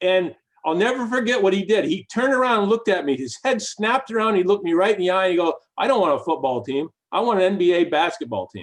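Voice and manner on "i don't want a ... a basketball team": play-acted firm, matter-of-fact, dead serious tone. Retelling a reply made at a dinner table: imitating Josh saying it firmly and seriously. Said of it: "he said it so seriously".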